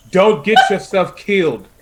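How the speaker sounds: screaming. Voicing a character who runs off, screaming out in Orcish. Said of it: "she screams out in Orcish".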